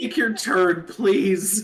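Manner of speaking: pained, very high, loud voice. During a game session, speaking to another player, pained. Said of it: "That sounded so pained".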